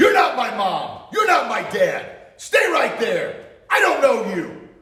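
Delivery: firm, assertive, loud, confident commanding voice. Showing how a child should answer an approaching stranger, projecting confidence. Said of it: "projecting confidence".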